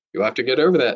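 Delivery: plain reading voice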